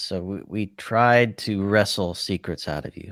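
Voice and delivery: ordinary talk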